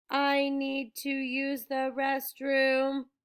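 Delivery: flat, toneless, rehearsed-sounding monotone. Missus Dodds gets up and announces to the whole bus, in a flat voice. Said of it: "In a flat voice".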